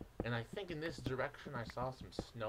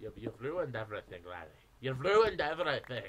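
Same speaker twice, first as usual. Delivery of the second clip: unplaceable, vaguely Irish put-on accent; 2 semitones lower, 7 dB louder than usual. In a bit with another speaker, using an accent the other cannot place. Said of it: "I don't know what accent that is".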